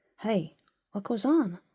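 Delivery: hushed whisper. Reading a story aloud, a character hearing a strange sound: whispering. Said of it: "he whispered".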